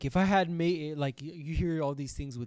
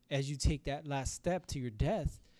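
ordinary delivery

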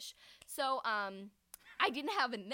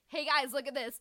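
usual speaking voice

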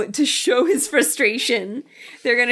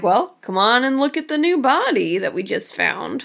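usual speaking voice

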